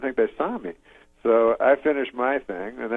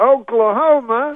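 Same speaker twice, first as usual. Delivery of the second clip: slowed-down crowd call, higher and louder; 12 semitones higher, 6 dB louder than usual. Retelling how Cosby hyped a crowd: imitating Cosby saying it slower. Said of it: "then he says it slower".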